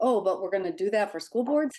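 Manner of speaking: mumbled aside to oneself. Retelling a colleague's remark from across the aisle: imitating a mutter under breath. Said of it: "I heard her mutter under her breath".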